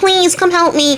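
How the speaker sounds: high, whiny, small nasal pleading voice. Telling a story, voicing a beggar on the road, whiny nasal voice. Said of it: "this whiny little nasal voice".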